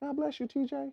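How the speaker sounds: very hushed, high, soft-spoken, gentle voice. Retelling what one of the nicest guys said to the speaker: imitating his soft voice. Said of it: "With his soft voice".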